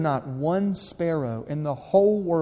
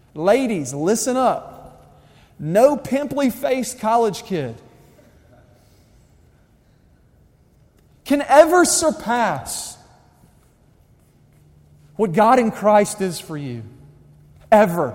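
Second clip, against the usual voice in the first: fired-up, high-pitched, loud yelling; 5 semitones higher, 5 dB louder than usual. Addressing the ladies, getting fired up: yelling. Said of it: "I just start yelling".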